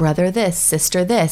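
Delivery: ordinary talk, nothing marked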